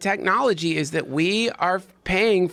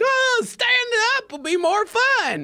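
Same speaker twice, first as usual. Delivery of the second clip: put-on very high, slow drawled southern accent. Imagining a roller coaster rider who wants to stand up, accidental Southern accent. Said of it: "Didn't do it mean to do a southern accent".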